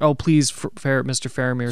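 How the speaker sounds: ordinary delivery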